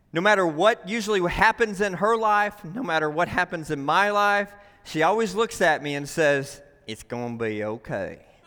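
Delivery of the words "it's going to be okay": put-on very low, hushed country accent. A husband quotes what his wife always says to him, imitating his wife's country accent. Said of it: "she has a country accent when she says it".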